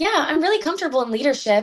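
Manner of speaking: bright upbeat voice. Contrasting their dry monotone with a hypothetical answer in upbeat lively voice. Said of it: "if I spoke like this".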